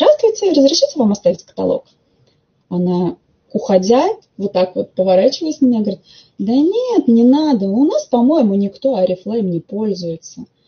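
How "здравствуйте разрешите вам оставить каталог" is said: mock, high, sing-song voice spoken through a smile. Retelling offering a catalog at an optician's, the speaker acts out a smiling greeting. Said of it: "я ей с улыбочкой на лице говорю".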